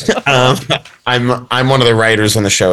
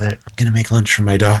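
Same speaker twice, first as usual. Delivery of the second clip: soft, put-on ASMR half-whisper; 3 semitones lower, 4 dB quieter than usual. Describing a guy on Instagram who makes lunches, speaker imitates him: ASMR half-whisper. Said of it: "does it in a sort of ASMR whisper".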